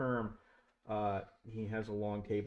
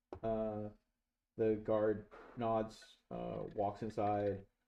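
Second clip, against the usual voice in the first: ordinary talk, nothing marked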